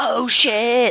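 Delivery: high, loud, blurted-out yell. Showing how to watch a movie by yelling at the TV: imitating yelling at the TV. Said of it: "you have to yell at the T V".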